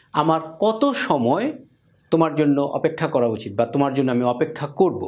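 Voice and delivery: ordinary talk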